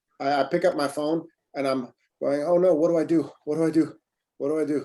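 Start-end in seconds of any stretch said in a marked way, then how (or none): 2.4-4.9 mock-panicked, acted panic. Recalling picking up their phone while stressed, acting out panicking. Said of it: "you're panicking".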